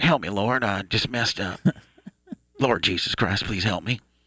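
fake, mock exaggerated Southern drawl voice. A host shows how they'll pray when the show gets away from them, mock Southern Bubba voice. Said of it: "I'm just gonna go into like some Bubba tongue".

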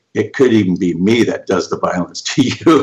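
plain

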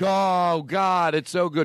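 fake, high-pitched, drawn-out TV rave delivery. Imitating tv actors who praise food before tasting: mock tv actor raving. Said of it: "Here's them".

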